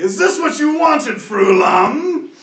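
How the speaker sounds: very high-pitched, very loud dragon voice shout. Voicing the dragon as it speaks to the party: speaking as the dragon. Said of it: "he's gonna say".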